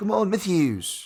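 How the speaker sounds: terrible fake Australian accent, very high-pitched. Podcast host backing his pick, in a terrible Australian accent. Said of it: "a terrible Australian one".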